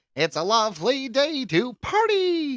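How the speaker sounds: very high, sing-song, swooping, unhurried felt puppet voice. Imagining puppets greeting someone in a cartoony vision: Jim Henson puppet voice. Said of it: "Jim Henson puppets everywhere, just being like".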